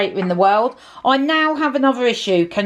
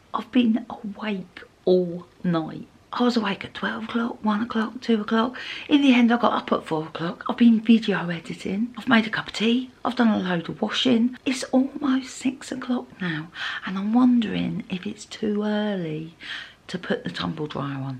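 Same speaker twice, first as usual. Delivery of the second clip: hushed whisper; 7 dB quieter than usual. Greeting viewers early in the morning before a big move, whispering. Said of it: "I'm whispering because it's early".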